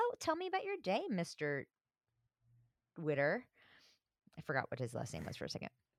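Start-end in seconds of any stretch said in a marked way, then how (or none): 0.0-3.4 cutesy, sugary sweet, cute voice. Retelling a pizza date scene, imitating Joey being cute. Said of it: "she's being so cute with her little pizza".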